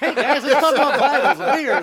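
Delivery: mock high, loud, whiny voice.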